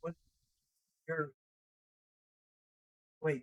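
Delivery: hard, hushed half-whisper, barely heard. Playing a confused character who is mumbling, half-whispering. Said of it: "You're whispering so hard".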